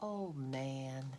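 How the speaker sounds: unusually nice voice. Showing what the speaker usually says to him, in a very nice voice. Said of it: "in a very nice voice, not my usual one".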